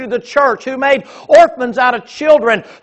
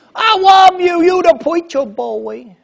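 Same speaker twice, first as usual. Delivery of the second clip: put-on drunken voice, higher pitched; 5 semitones higher than usual. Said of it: "He's like a drunk".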